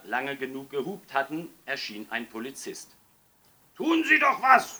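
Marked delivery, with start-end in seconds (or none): 3.7-4.8 very high, very loud, booming roaring bellow. Narrator reads the fathers shouting at a policeman, roaring. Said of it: "brüllten die Väter".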